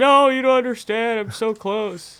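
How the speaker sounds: mock sobbing, very high crying voice. Retelling the weekends before landing a trick: imitating own past crying.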